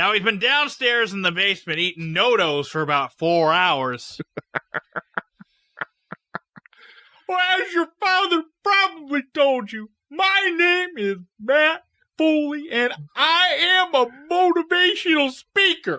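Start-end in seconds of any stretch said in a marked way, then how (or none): 7.3-16.0 very high-pitched, slow voice, each word dragged. Doing a bit as a motivational speaker for the others: Matt Foley voice. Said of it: "Only if I can talk like that".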